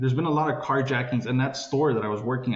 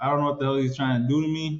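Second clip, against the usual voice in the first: normal talking voice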